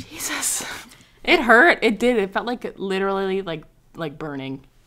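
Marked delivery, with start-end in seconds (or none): 0.0-0.6 soft, unvoiced, breathy whisper. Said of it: "look at myself in the mirror and be like".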